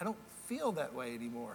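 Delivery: feel pressed down, low and soft.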